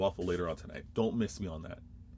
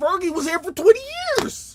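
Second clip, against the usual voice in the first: raised pitch, higher and louder; 12 dB louder than usual. Making a point about comparing equal time periods: voice went high. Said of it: "my voice got high".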